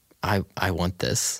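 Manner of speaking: mock broken, halting, slow voice. Retelling Walt's answer to Jesse at gunpoint: imitating Walt's broken voice. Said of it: "his voice is, like, so broken when he says it".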